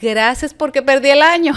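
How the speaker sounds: loud, high, thankful, grateful cry.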